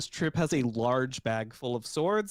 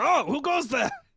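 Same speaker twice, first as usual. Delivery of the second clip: wary, suspicious guard voice, higher and louder; 13 semitones higher, 4 dB louder than usual. Voicing a guard who turns around at a noise: suspicious guard voice. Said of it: "a guard suspiciously turns around".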